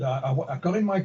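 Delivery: normal talking voice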